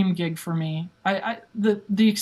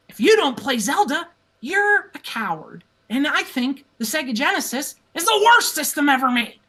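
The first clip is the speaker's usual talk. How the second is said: wild, high-pitched, goading, combative rant; 6 semitones higher than usual. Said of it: "I'm going like this".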